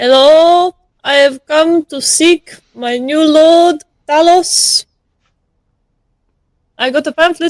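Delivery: shouted, high-pitched yell. A character sauntering in announces herself to the people there: yelling. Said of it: "She's yelling".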